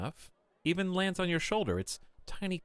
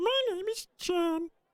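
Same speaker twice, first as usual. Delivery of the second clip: very high, tiny, chirping bug voice; 4 dB louder than usual. Voicing a small creature answering a greeting: chirping little creature voice. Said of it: "the creature replies, chirping".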